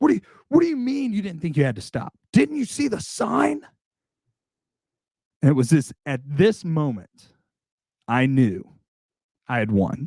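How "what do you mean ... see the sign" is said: mock gasping, panting speech, much higher. Retelling a confrontation, quoting the man's demand: imitating gasping, panting speech. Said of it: "panting, just gasping for breath".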